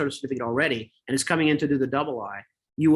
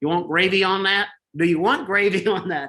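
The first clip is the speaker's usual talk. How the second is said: put-on American southern accent; 5 semitones higher, 4 dB louder than usual. Quoting the person who asked what they'd like to eat, in a southern accent. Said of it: "they had a southern accent".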